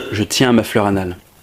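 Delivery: smooth, sultry, suave, sensual delivery. Commenting on a video, delivering a favorite joke line: suave, sensual tone. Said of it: "sur un ton un peu suave et sensuel".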